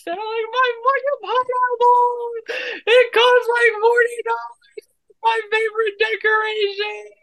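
very high, distraught, acted-out shriek. Telling how the pineapple decoration fell and broke, retelling a scream. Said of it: "I screamed so fucking loud".

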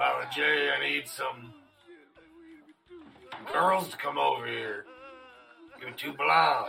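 very rough, raspy voice with swooping pitch. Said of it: "Like, real raspy and shit".

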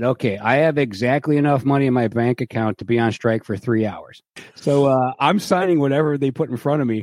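usual speaking voice

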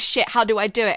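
ordinary delivery

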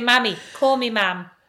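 normal talking voice

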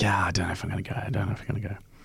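hesitant, soft, whispered mumble.

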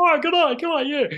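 very high-pitched, very loud voice. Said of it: "your impression of Bob Katter is just spot on".

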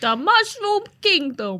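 very high, loud, swooping character voice. Repeating a phrase from a game advert: Mario voice. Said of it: "That's how he sounds".

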